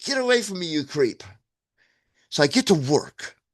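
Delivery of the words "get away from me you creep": mild, toned-down yell with raised pitch. Retelling how a stranger offering a ride was answered: retelling a yell. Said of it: "And I yelled".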